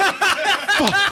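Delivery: mock dismayed old man, high, laughing groan.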